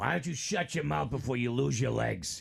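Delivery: put-on gruff, rough voice with Massachusetts accent. Speaker retelling what a woman said to someone, in a rough Massachusetts-accent voice. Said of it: "She had a rough voice, like Massachusetts".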